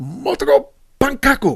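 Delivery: very high, shrill, angry barking yell. Retelling how Bigfoot yells at the cook: imitating Bigfoot yelling. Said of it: "And he's yelling at him".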